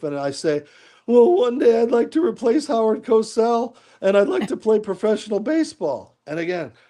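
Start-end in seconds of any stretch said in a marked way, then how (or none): 1.1-6.2 put-on very high, cracking, crackly teenage voice. Retelling what he answered on an old tape as a kid, in a crackly fifteen-year-old voice. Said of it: "in my crackly fifteen year old voice".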